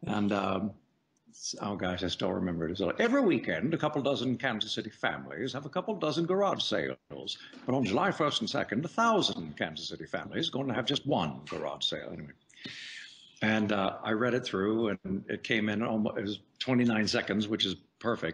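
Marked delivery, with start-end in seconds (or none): 3.0-12.1 put-on old-timer New England man voice with swooping accent. Retelling a first read for an ad agency: Pepperidge Farm old man voice. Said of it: "you can talk like a seventy-year-old New England man?".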